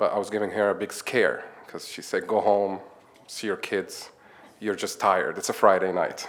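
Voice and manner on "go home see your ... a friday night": ordinary talk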